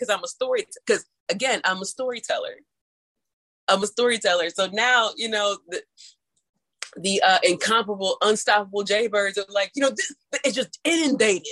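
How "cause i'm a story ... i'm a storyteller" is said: normal talking voice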